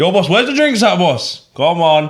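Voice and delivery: loud calling voice. Retelling how a friend called out for drinks in a shop: imitating a loud friend. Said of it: "he's genuinely this loud everywhere he goes".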